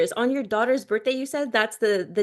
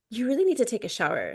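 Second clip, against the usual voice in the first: put-on disgusted, grossed-out, put-off tone; 3 dB quieter than usual. Retelling what the son said after the workout: imitating a disgusted tone. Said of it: "with disgust".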